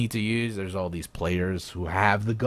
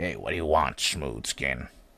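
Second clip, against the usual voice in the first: put-on ghoul character voice; 6 semitones lower than usual. Showing viewers a drawn ghoul's voice: ghoul voice. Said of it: "How's my ghoul".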